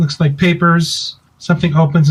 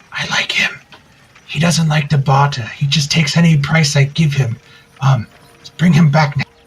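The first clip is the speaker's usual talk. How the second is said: conspiratorial, secretive stage half-whisper; 2 semitones lower than usual. Shopkeeper leaning close to Drummond as he leaves, half-whispering. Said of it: "he whispers to you".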